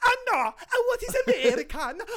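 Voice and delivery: put-on Italian accent. Repeating someone's quoted line in a put-on Italian accent. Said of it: "in an Italian accent".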